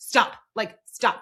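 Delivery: mock firm, stern, halting tone. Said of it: "the way that you would tell a toddler".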